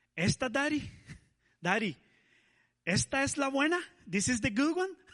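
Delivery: very high, asking tone. Retelling how his daughter April asked about waves: imitating his daughter asking. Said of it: "and she said it like this".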